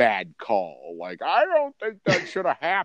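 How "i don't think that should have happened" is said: sports booth analyst voice, pitched up. Imitating a football commentator's call of a bad play: Troy Aikman impression. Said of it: "the only way you know Troy Aikman's voice".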